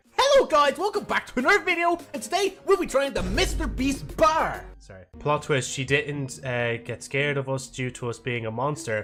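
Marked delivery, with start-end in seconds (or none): 0.2-4.7 squeaky, very high online video host voice. Joking about going crazy while playing: mock YouTuber video intro. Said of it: "be like".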